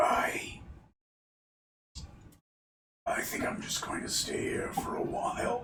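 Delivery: very weak, feeble, breathy whisper. Voicing a character who interjects: very weak voice. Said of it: "she has a very weak voice".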